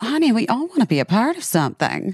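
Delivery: swooping sing-song actress voice, savoring and leaning on "honey". Answering the other speaker playfully in a Kim Cattrall impression. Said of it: "that's my Kim Cattrall for you".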